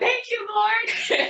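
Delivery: very high, delighted, joyful cry. Retelling getting two messages at once: imitating own joyful scream. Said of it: "I literally screamed out".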